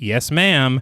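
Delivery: mock sarcastic tone. Retelling a movie scene, imitating a sarcastic reply. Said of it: "Sandy replies with a sarcastic".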